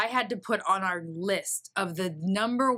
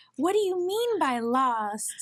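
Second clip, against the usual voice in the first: mock meek girlish voice, higher; 7 semitones higher than usual. Retelling a woman's recorded call in a little meek voice. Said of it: "this little meek girl".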